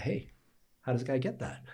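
half-joking, offhand casual delivery. Recalling asking a man about a site lease: retelling a half-joking question. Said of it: "I kind of half jokingly say to the guy".

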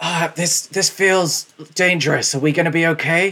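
whispering commoner voice. Voicing a commoner in the background of another cave: whispering commoner. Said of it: "you hear the commoner whisper".

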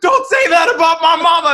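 very high, very loud, shrill full-blast yell. Retelling a movie scene where a character yells at a quarterback: imitating a character yelling. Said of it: "yelling at these guys, like".

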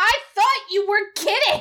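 indignant, offended, high-pitched whine. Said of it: "she just gets really indignant".

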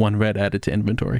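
voice from far off in the distance. After Taya looks at her pendant, a very quiet distant voice speaks. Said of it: "a voice from off in the distance very quietly goes".

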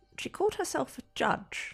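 whisper. Retelling what he said about her: lowered voice. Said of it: "he lowers his voice and goes".

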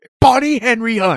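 very high-pitched, adamant, dead-certain insistence. Imitating a buddy who insisted on a wrong name: imitating Michael, adamant. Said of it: "He was adamant".

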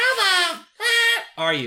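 very high, squeaky cartoon voice with big swoops. Quoting a bleeped line from a cartoon episode, as a SpongeBob impression. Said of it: "that's my SpongeBob impression".

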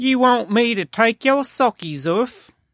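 high-pitched put-on British accent, slipping in and out. Imagining how foreigners would ask the question, speaking in a British accent. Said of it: "her British accent comes out".

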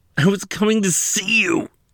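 very high, pained, begging tone. A man with a fractured leg pleads with the woman questioning him, pleading through pain. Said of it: "he pleaded through the pain".

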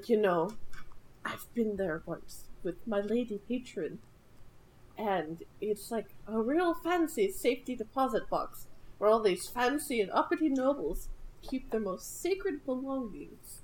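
hushed, confidential murmur. Retelling a game scene, a character answers a question about the vault: lowered voice. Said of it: "he lowers his voice and he's like".

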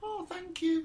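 feeble, thin, weedy, very high little voice. Retelling a scene, acting out a man's thanks in a weedy voice. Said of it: "this sort of weedy voice from him".

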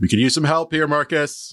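very high shout. Calling to a party member for help in a fight: yelling for help. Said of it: "and I yelled".

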